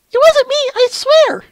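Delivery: awful, very high, squeaky character voice, badly acted. Reading a comic aloud, voicing the accused character, terrible voice acting. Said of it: "Incoming more terrible voice acting".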